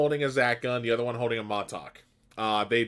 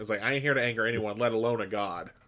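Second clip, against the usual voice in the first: usual speaking voice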